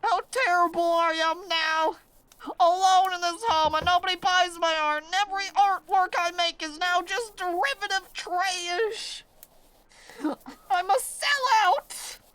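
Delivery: fake sobbing. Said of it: "and I'm crying".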